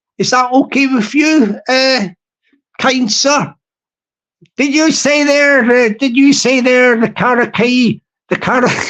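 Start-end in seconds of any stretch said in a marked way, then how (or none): 4.6-8.7 put-on southwest of England accent. Playing a character questioning a visitor: southwest of England accent. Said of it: "sorry for the southwest of England accent".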